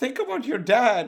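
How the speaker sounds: desperate, high, loud, tearful crying pleading tone. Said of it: "You're like".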